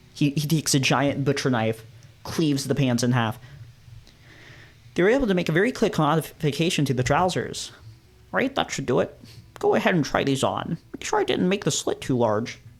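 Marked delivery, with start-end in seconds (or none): 8.3-12.6 distinct, animated put-on voice, swooping. Reading a game's lines aloud as the tailor: unique voice for the tailor. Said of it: "the only character who's getting an actual unique voice".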